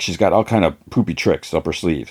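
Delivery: ordinary talk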